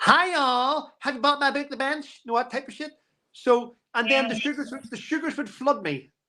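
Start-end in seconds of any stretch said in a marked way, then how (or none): 0.0-2.2 AI-made, fake American accent. Imagining an anonymous YouTube channel, doing a fake Meghan Markle American accent. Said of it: "and I have an American accent".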